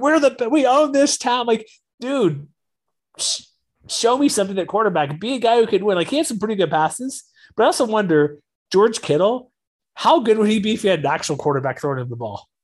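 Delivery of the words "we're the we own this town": sudden high, drawn-out excited outburst, freaking out. Retelling the quarterback's post-game interview: imitating Jimmy Garoppolo freaking out. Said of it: "Then he freaks out".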